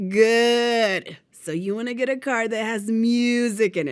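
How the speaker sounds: slow, throaty drill-instructor voice, good drawn out. Retelling what the drill instructor said about the music card: imitating drill instructor's deep throaty voice. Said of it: "her deep, throaty voice".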